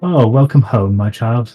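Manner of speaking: soothing, calming woman's voice. Voicing a woman who welcomes the player home: calming woman's voice. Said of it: "you hear a calming woman's voice".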